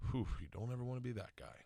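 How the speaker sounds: soft mutter under the breath. Retelling a remark overheard at a bar: Zach Galifianakis muttering under his breath. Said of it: "I just heard Zach say under his breath".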